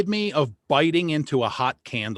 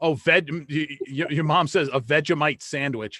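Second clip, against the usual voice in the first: usual speaking voice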